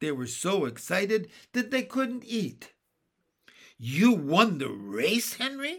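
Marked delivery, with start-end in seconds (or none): 3.8-5.8 loud, delighted, drawn-out cry of gladness. Jesse asks Henry, who has just shown a silver cup, about the race; delighted cry. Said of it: "cried Jesse, delighted".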